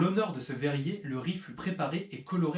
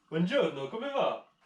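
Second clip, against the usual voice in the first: over-the-top, exaggerated Italian accent; 3 semitones higher than usual. Host greeting viewers in italian at the start: exaggerated italian accent. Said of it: "mon super accent italien".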